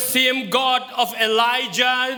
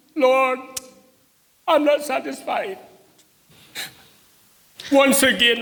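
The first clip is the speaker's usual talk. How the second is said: tearful voice, crying while speaking. Praying aloud before a church after saying they are crying: crying while praying. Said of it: "because I'm crying".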